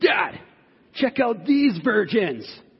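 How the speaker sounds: put-on high, drawn-out child's yell. Retelling a six-year-old son yelling across store aisles: imitating a child yelling out loudly. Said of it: "loud enough for the whole store to hear".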